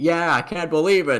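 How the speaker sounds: high-pitched loud shout. Voicing an overconfident woman in the crowd: yelling in character. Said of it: "even yells".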